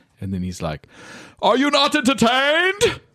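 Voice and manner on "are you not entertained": very high-pitched taunting call, projected upward. Retelling a favorite Gladiator scene after a kill, in a Russell Crowe as Maximus impression. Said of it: "Russell Crowe as Maximus in Gladiator".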